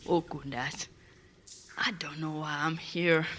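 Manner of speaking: quiet murmur under the breath. A player voicing his character sitting on his bed: quietly, to himself. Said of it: "he just quietly to himself goes".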